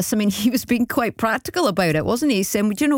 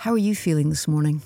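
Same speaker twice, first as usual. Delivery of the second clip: calm, put-on therapist voice; 6 semitones lower than usual. Radio host asks a caller the therapist question, in best therapist voice. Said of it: "in my best voice".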